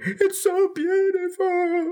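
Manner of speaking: very high, weepy, sobbing, tearful voice. Retelling a film scene of passengers in the shuttlecraft: imitating people crying. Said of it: "crying, going".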